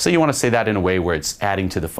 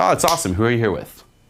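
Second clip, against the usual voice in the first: light, playful, fun delivery; 2 semitones higher than usual. Showing how to ask who someone is with: playful, fun tone. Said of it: "I'd say it where I'm adding to the fun".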